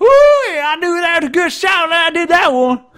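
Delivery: very high, very loud backwoods holler, hunter-style whoop. Recalling a hunter he used to imitate, doing a redneck hunter voice. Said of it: "I used to try and do that guy's voice".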